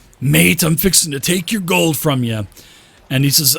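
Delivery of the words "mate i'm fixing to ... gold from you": big burly guard character voice. Narrating a game scene, voicing a big burly guard who challenges the player. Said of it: "this big burly guard ... and he says".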